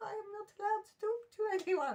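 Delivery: put-on high, tearful little-girl voice.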